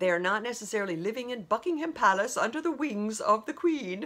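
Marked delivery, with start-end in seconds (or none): 1.0-4.1 put-on British accent, slipping into it. Speaker talking about royals living their own life; British accent. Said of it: "I don't know why I have to keep going into that accent".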